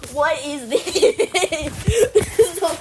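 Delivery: loud, high laughing voice full of disbelief.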